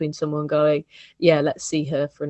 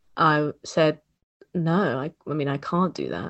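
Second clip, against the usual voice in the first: usual speaking voice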